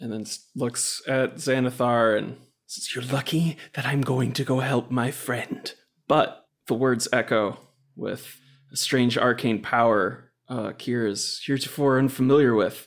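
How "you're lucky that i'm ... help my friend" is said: hushed whisper in character voice. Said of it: "starts whispering, uh, just curses under their breath".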